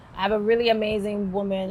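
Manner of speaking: plain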